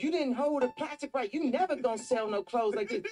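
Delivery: play-acted very high, screamed five-year-old scolding voice. Retelling a five-year-old designing a dress with him as assistant: imitating North screaming. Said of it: "she be screaming at me".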